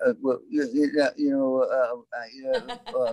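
high, swooping, sing-song halting ramble full of fillers. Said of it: "That's a great impersonation".

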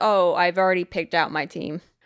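put-on sheepish voice. Retelling how he answered a request to join his team: imitating a sheepish reply. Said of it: "very sheepishly kind of just goes".

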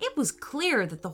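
ordinary delivery

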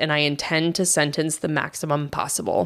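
ordinary delivery

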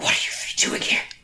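loud stage whisper. A game master's character spots the three of them and speaks in a loud whisper. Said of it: "sometimes you'll whisper very loudly?".

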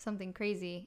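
normal talking voice

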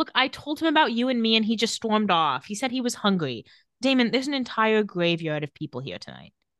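normal talking voice

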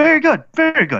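very high, stilted, awkward droid voice. Game master voicing a droid offering the party food, in a protocol droid voice. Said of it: "a protocol droid kind of very awkwardly walks up".

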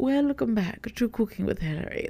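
grandly upper-class British accent. Creator recalls how she opened one of her cooking videos; very posh Professor McGonagall accent. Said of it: "me doing like a very posh, very like Professor McGonagall like accent".

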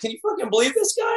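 put-on very high voice, laughing through words. Retelling a confrontation, the speaker quotes a man talking to other guys: imitating someone laughing. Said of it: "he laughed".

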